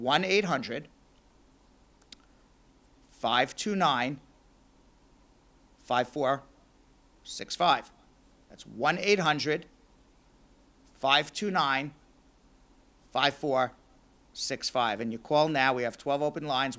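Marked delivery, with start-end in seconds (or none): 0.0-15.0 slow, halting, deliberate digit-by-digit reading. Repeating the phone number so callers catch it, a little slower. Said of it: "So let me say it a little slower".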